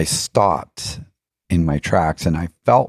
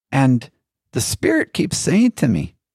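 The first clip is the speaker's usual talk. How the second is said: poor put-on Irish accent, pitched up; 9 semitones higher than usual. Retelling what a man said while they were dieting, in a not-very-good irish accent. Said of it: "I'm not doing a very good Irish accent".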